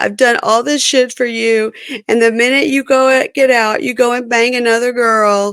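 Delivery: put-on tearful, upset, high-pitched speech through crying. Recapping the show's last scene, her speaking to him: retelling crying, upset. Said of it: "sitting on the couch and crying and saying".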